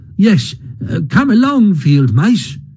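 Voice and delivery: keen, eager, high-pitched welcoming cry. Reading a story, the mole calls to the field mice: eager. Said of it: "cried the mole eagerly".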